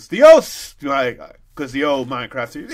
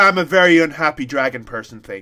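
ordinary talk

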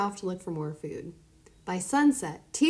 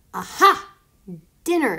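loud, hungry fox snarl; 7 dB louder than usual. Narrating Fox, ready to pounce on Kai hiding under a rock: snarled. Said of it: "snarled Fox".

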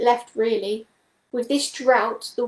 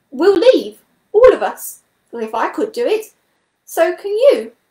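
eager, excited, high and swooping; 6 semitones higher, 7 dB louder than usual. Hopeful again after hearing the water is gone, he exclaims excitedly. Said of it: "he exclaimed excitedly".

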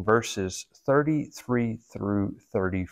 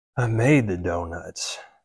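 put-on low, weary, worn-out, exhausted sighing voice; 4 semitones lower than usual. Retelling what a man said returning home each evening, imitating an exhausted sigh. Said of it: "he would say in an exhausted sigh".

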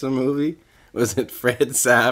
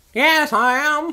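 put-on old woman voice, higher pitched; 3 dB louder than usual. Playing the car seller in a skit, answering the buyer at the door: old woman voice. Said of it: "I'll be an old woman".

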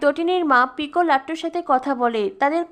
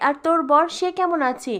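plain

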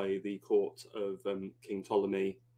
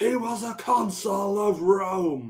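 very slow, very high, drawn-out revolted scream; 12 semitones higher, 7 dB louder than usual. Retelling a scene where Caesar is presented a head: imitating Caesar screaming. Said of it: "he just screams".

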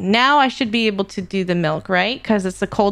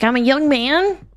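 rough put-on young boy voice; 4 semitones higher than usual. Offering a boy voice for everybody, in a put-on young boy voice. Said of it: "I'm gonna do like a free boy voice for everybody".

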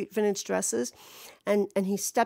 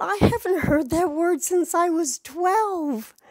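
put-on startled, weirded-out outburst, high and loud; 7 semitones higher, 5 dB louder than usual. Retelling blurting out a reply on a path: retelling own shocked blurt. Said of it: "exactly in this tone of voice 'cause it was that shocking".

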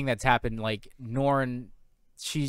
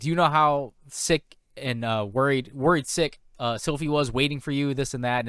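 ordinary talk

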